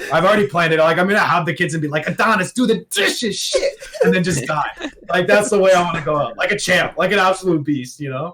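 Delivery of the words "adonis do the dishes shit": put-on drawn-out, slow, pitched-up old Polish man voice. Speaker imagines himself old, talking to his kids: old Polish man voice. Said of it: "start talking like an old Polish man".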